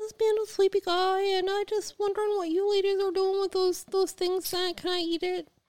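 high-pitched, loud dog voice. While friends fuss over a sleepy dog, one speaks for him, voicing Ollie. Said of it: "That's not his voice".

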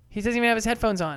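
ordinary delivery

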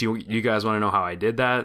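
ordinary talk

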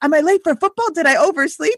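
put-on high, frantic, freaked-out panicking voice. A parent retelling the youngest son's panic about being late, imitating a freaking-out son. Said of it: "my youngest son is like freaking out".

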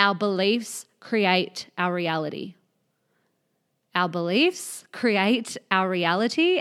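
slow, deliberate, weighted delivery. Speaking to listeners, saying an important point slowly. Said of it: "I'm going to say this slowly".

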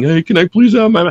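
begging tone. Acting out how not to ask a label for masters: mock pleading.

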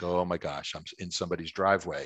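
plain

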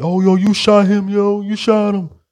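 put-on high, stretched, drawn-out alarmed yell. Retelling people yelling at a man who shot someone, retelling people yelling. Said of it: "people are yelling".

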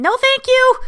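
all-out yell, very high, very loud, shrill. Retelling how they answered the cab driver's offer: retelling a yell. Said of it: "I just yelled".

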